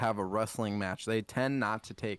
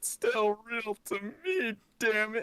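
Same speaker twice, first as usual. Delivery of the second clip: mock crying, higher; 12 semitones higher than usual. Retelling a grown man at a wrestling convention: imitating a crying fan. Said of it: "and he's crying".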